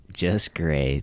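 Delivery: sarcastic delivery. Answering a co-host's question about how he is doing: sarcastic. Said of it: "That sounds super sarcastic".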